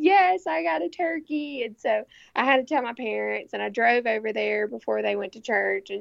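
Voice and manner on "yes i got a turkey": mock crying, very slow, high-pitched, weepy, drawn out. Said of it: "And I'm still crying".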